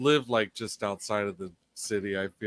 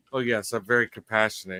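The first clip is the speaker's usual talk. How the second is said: ordinary talk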